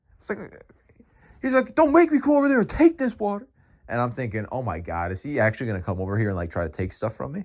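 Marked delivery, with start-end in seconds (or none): 1.8-3.5 shrill, very high, loud, menacing yell. Retelling what a homeless man shouted at the speaker, acting out a yell. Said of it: "he's like yelling at me more".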